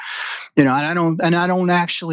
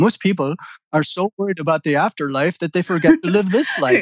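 put-on Indian accent; 3 semitones higher than usual. Quoting something DeMello said one time, in DeMello's Indian accent. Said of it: "he's got Indian accent".

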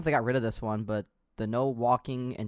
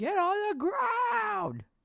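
very high-pitched, stretched-out, drawn-out scream. Retelling last night's game, imitating Toko screaming. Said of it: "he's literally screaming into his mic".

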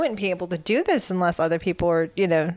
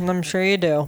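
normal talking voice

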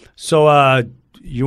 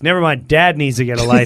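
normal talking voice

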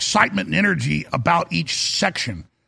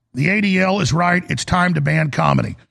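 plain

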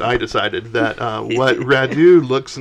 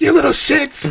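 play-acted screechy, very high-pitched yelling. Acting out a woman at the kids' table yelling at toddlers: retelling a yell. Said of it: "she's like yelling at toddlers".

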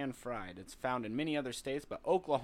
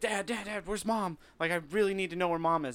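mock frantic, high, rushed, freaked-out voice; 5 semitones higher, 6 dB louder than usual. Retelling waking a dad during a thunderstorm: imitating own panicked plea. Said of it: "I'm freaking out 'cause of the thunderstorm".

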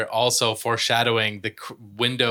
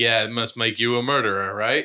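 usual speaking voice

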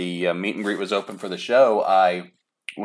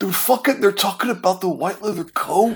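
very high-pitched put-on voice; 12 semitones higher than usual. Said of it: "I'm doing a [name] impression of [name]".

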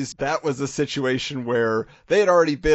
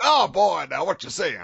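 swooping, forceful, swaggering know-it-all bluster; 3 semitones higher than usual. Doing a favorite cartoon character: Foghorn Leghorn voice. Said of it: "I enjoy me some Foghorn Leghorn".

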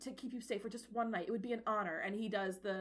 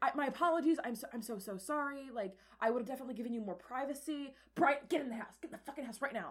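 put-on frantic panic, freaking out; 3 semitones higher than usual. Retelling what a man says while freaking out, acting out the panic. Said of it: "he's like freaking the fuck out".

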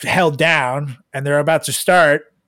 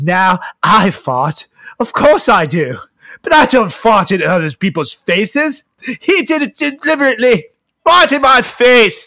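put-on British accent with pitch raised up; 6 semitones higher, 4 dB louder than usual. Retelling what Margot said about the former California governor, Margot impression, British accent. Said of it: "You got to do the accent".

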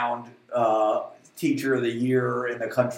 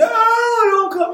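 very shrill, very high, very loud scream; 9 dB louder than usual. Recalling a brother kicking in the bathroom door, re-enacting own screaming. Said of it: "I'm screaming".

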